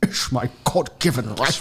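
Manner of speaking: put-on Scottish accent. Joining in quoting Sean Connery: Sean Connery impression. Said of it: "Putting the accent on abuse".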